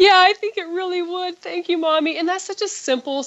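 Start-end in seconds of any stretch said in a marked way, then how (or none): 0.0-2.2 put-on sweet young little girl voice. Mother retelling her daughter's reply after an apology, in a sweet 9-year-old's voice. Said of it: "in my sweet 9-year-old's voice".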